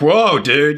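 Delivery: stock beach surfer dude voice. Speaker voicing a character who keeps coming out as a surfer dude voice. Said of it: "It's a surfer dude".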